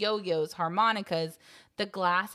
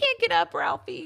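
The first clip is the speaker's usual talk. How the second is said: put-on crying little boy voice, higher and louder; 11 semitones higher, 5 dB louder than usual. Retelling a movie scene where the little brother falls: imitating Randy crying. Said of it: "and Randy's still crying".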